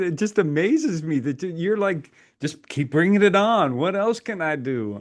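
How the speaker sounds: amused speech repeatedly broken up by laughter. A listener reacts to the other speaker's packed schedule, laughing while talking. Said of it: "I'm sorry, I'm laughing".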